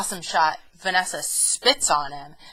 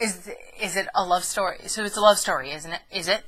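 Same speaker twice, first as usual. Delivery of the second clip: normal talking voice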